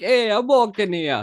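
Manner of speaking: put-on slipping into Italian accent. Showing how their accent practice keeps slipping, accidental Italian accent. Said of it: "That's freaking Italian again".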